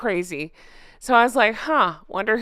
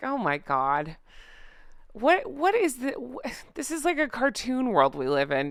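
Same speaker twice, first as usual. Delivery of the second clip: squeaky, exasperated outburst of disbelief; 4 semitones higher, 4 dB quieter than usual. Reacting to how people have treated their family, exasperated squeaky voice. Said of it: "my exasperated voice".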